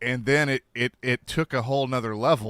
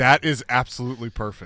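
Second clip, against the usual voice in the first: normal talking voice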